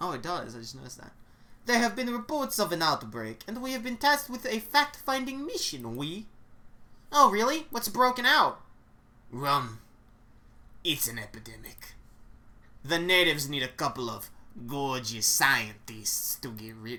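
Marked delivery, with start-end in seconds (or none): 9.3-17.0 put-on Russian-accented character voice. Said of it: "That's the Russian voice".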